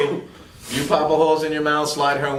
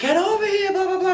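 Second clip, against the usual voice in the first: very high mock scream. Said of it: "her scream".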